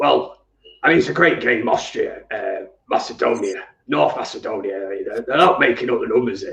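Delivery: ground-out, gritty voice from the throat. Answering a request to do a Sean Dyche impression, gravelly. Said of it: "do your Sean Dyche impression".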